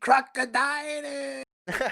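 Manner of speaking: play-acted very high-pitched, loud screaming. Imitating an anime episode where everyone screams while searching: Luffy screaming. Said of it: "they're just screaming".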